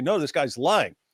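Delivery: ordinary delivery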